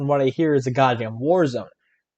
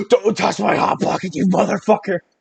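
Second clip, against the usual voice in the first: put-on furious outburst, raspy, rough and pitched up; 6 semitones higher, 3 dB louder than usual. Retelling a middle school fight: angry imitation of Paul. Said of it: "Paul got really, really mad".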